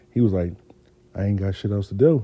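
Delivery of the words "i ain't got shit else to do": mock quiet creepy psychopath voice, lower, quieter. Retelling how a friend answered the phone: imitating friend's quiet psychopath voice. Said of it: "he talks real quiet like he a psychopath".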